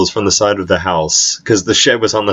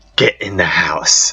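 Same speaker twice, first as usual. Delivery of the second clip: furious half-whispered, half-yelled delivery; 2 semitones lower than usual. Retelling what she said to them, acting out a whisper-yell. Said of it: "she whispers, but also yells".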